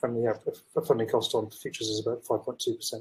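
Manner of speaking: normal talking voice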